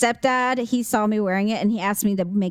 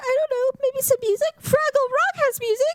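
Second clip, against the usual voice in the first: put-on very high crying little-girl voice. Retelling a video of a little girl who answers her dad: imitating a crying little girl. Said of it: "the little girl that was in the living room crying".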